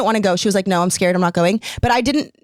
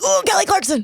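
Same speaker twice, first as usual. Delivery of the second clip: put-on pained yell, much higher in pitch; 11 semitones higher than usual. Explaining what they say in there, doing a Steve Carell pained yell impression. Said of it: "I yell".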